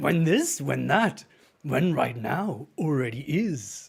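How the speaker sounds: creaky put-on character voice. Prompted to say a line in a Yoda voice. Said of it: "in a Yoda voice".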